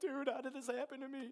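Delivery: very high, near-sobbing, tearful crying voice. Retelling a call made to a friend about sudden feelings: imitating own past crying. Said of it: "I called him probably crying".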